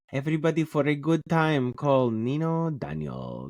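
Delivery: terrible put-on Bosnian accent, sing-song. A Bosnian host introducing themselves on a show about the paranormal, in a terrible put-on Bosnian accent. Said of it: "That was my terrible impression of a Bosnian accent".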